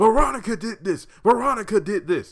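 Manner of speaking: very high, loud, desperate shout. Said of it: "for him to finally say".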